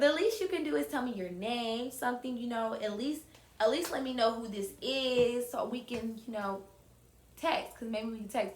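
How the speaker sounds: ordinary talk, nothing marked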